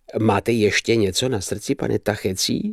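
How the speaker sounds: plain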